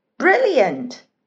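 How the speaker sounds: beaming, glowing, delighted, bright and loud. Judy the rabbit responds to Terry the tortoise's notes, beaming. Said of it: "Judy beamed".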